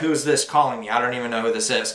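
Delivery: normal talking voice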